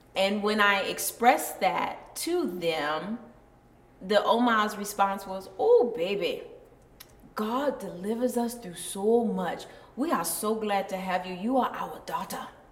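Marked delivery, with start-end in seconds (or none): 5.6-12.4 put-on Liberian accent. Retelling the Oma's response on hearing you were married before, in a Liberian accent. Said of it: "got that Liberian accent down".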